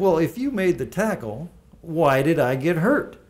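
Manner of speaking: slightly cocky tone. Retelling arguing with John over who took credit, speaking to John: retelling a cocky remark. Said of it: "in a little bit of a cocky a tone of voice".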